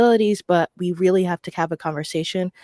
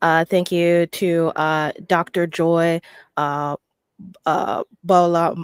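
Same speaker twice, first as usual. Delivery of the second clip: slow, halting, stumbling stutter. Giving thanks to people by name in a shout-out, stuttering. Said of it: "I'm stuttering right now".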